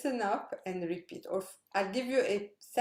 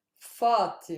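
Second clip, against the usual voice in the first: Fatima, stress on first syllable fa; 3 semitones lower, 6 dB louder than usual. Pronunciation lesson on stressing the first syllable: stress on Fa in Fatima. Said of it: "how I stress the first syllable".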